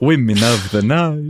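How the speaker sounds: slow, drawn-out vampire voice. Repeating a phrase for a joke in a Dracula voice. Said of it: "You don't have to say it like Dracula".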